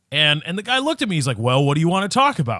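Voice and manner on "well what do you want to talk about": suspicious, accusing, challenging tone. Retelling how a car salesman answered a price question: imitating an accusatory tone.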